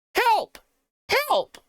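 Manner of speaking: squeaky, very high-pitched voice with cries. Game narrator voicing a cry from the waste hole, squeaky high-pitched voice. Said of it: "You hear a squeaky, high-pitched voice".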